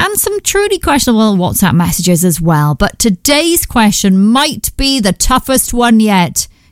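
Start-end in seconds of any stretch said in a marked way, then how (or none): 2.8-6.5 slow, dry sarcasm. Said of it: "Can you hear the sarcasm in my voice?".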